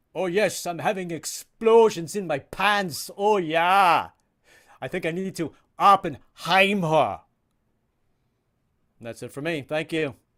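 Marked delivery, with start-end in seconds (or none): 0.2-7.2 booming, drawn-out, slow delivery. Doing a final impression for the audience: Arnold Schwarzenegger impression. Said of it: "This is Arnold Schwarzenegger as Oppenheimer".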